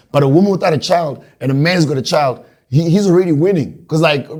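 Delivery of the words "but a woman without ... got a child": ordinary talk, nothing marked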